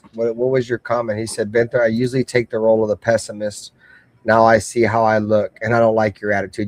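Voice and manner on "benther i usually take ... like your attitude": plain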